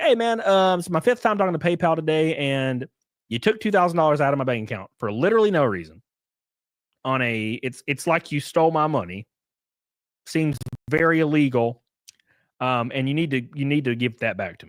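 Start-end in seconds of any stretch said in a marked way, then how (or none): none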